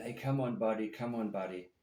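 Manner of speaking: ordinary delivery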